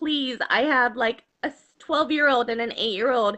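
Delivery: normal talking voice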